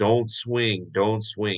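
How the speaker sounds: ordinary delivery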